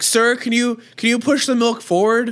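acted very high, loud yell. Retelling a lady at a store calling to a man: imitating a lady yelling. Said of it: "she was, like, yelling".

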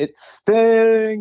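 very high, badly done announcer-style yell. Imitating an announcer yelling a wrestler's name: terrible Tony Schiavone impression. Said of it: "That's a terrible impression".

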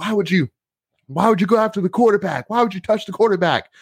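put-on very high, shrieking, top-of-the-lungs yelling. Retelling what a player said after the game: imitating someone screaming. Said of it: "screaming at the top of his lungs".

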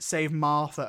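ordinary delivery

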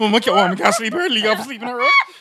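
high, loud, freaked-out babbling.

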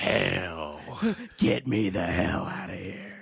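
superhero voice, Hell stretched out, pitch swinging. Excited about a new trailer, speaker repeats a character's cussing line in Batman voice. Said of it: "Are you doing the Batman voice now?".

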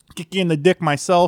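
put-on thick Chicago gangster accent, high and loud. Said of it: "best, thickest Chicago accent you've ever heard".

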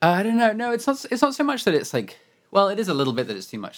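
high, fast, breathless rush. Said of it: "Sorry, I'm out of breath".

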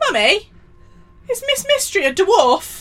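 put-on booming, very loud, shrill, high, swooping child voice. Retelling what Darcy asked on the walk to school, imitating Darcy talking loudly. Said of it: "Darcy very loudly says".

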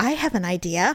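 ordinary delivery

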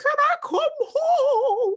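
very high, slow, tearful sobbing voice. Retelling a tearful call home to mom: imitating own past crying. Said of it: "start crying on the phone".

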